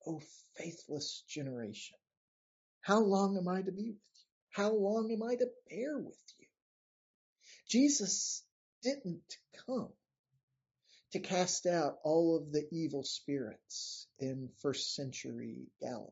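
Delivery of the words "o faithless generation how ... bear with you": acted-out exasperation, fast and fed-up. Quoting Jesus's words to those around him, acting out exasperation. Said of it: "You can hear the exasperation in his voice".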